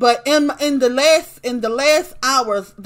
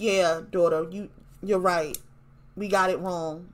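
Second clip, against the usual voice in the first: low, soft, murmured, conceding tone; 5 semitones lower, 9 dB quieter than usual. Quoting what Cree said to her daughter, imitating Cree's low voice. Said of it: "she says it in such a low voice".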